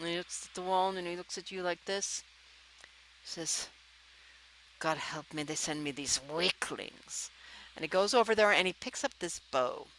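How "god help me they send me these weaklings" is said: quiet, low grumbling. A narrator voices a character turning to the listener, in a Grumpy voice. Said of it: "this would be Grumpy".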